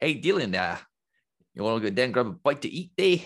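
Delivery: put-on New Zealand accent throughout. Showing which accent they can do better, in a new zealand accent. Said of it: "I think I can do New Zealand better".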